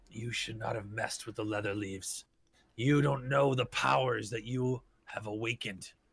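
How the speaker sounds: gruff but elegant, out of breath. Voicing a figure's warning just before initiative, gruff but elegant, out of breath. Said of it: "rather gruff, if somewhat elegant sounding, as like someone who's been running".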